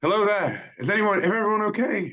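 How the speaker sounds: very high shout, calling out into the distance. Playing a character calling toward where the horse came from: yelling out in character. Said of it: "and I'll yell out".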